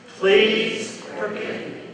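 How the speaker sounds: slow, emphatic delivery with conviction.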